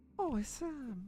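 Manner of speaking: put-on Irish accent. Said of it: "Yeah, she was Irish".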